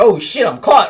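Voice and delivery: mock startled, caught-off-guard voice. Retelling how she reacted when caught: imitating someone caught off guard. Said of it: "she like deer in headlights".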